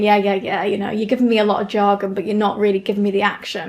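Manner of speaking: normal talking voice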